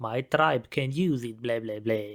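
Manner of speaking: slow, drawn-out mock vampire accent. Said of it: "why does this lady make a vampire accent".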